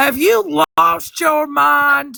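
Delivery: angry ranting voice. Retelling how Ethan answered a commenter on his live: imitating Ethan going off angrily. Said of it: "he was going off about Courtney".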